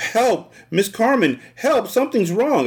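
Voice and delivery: little mouse squeaks, very high, tiny shout. Reading a story aloud, a character trying to shout for help: tiny squeaky shout. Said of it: "It came out all tiny and squeaky".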